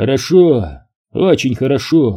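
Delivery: plain reading voice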